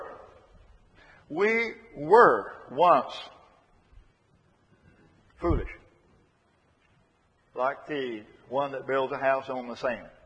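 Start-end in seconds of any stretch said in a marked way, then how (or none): 1.3-3.1 were drawn out slowly and loudly. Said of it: "underline the word were".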